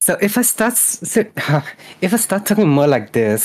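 put-on Valley Girl accent. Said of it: "how I would do my Valley Girl accent".

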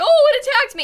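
very high, shrill, freaked-out cat voice. Describing the cat after a robot ran into her: imitating cat freaking out. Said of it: "she like freaked out".

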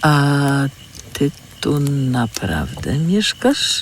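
slow, hesitant, uncertain tone. Urwis asks Lea whether she lives there, asking uncertainly. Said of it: "Spytał niepewnie".

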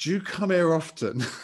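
loud, high, acted drunken slur, words run together. Recalling being very drunk and greeting a rugby club captain, retelling a drunken slur. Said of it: "in a very slurry way saying".

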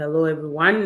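ordinary delivery

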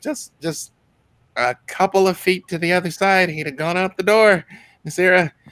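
squeaky, high-pitched gnome character voice. Voicing a gnome who brings out ale: gnome character voice. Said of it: "he's like".

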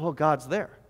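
put-on spiritual wonder, reverent, awestruck. Retelling how people react to the verse: mock spiritual awe. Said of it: "it becomes this very spiritual moment".

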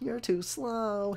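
high voice squeezed through nose. Describing Sonic's voice and trying to recreate it, Sonic voice. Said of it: "I tried to like recreate it".

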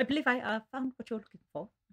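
put-on very thick British accent, hesitating. Repeating a line from the film: Hugh Grant impression. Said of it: "Hugh Grant might be the most British person alive".

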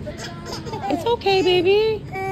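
put-on very high, slow, soothing cooing baby talk.

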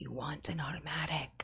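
hushed, very soft, slow, drawn-out whisper. Retelling what another speaker whispers at night: imitating someone whispering. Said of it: "he just whispers into my ear".

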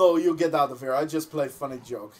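put-on Russian accent throughout. Retelling what a man said to him, in a Russian accent. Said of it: "But in a Russian accent".

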